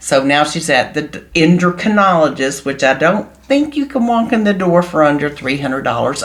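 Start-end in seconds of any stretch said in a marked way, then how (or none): 2.6-6.2 sardonic, sarcastic aside. Commenting on a post that is being read aloud: sarcastic. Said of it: "I'm being, again, sarcastic".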